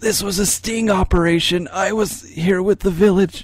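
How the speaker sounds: put-on high, dying-gasp voice on a final breath. Voicing a stabbed guard speaking with his dying breath: dying breath voice. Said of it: "with his dying breath, he's like".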